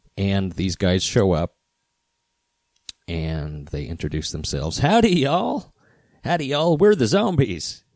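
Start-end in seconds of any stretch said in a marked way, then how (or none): 4.8-7.8 very high-pitched, put-on Southern US accent. Telling a story about a band showing up, quoting their greeting in a southern accent. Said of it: "They had a southern accent".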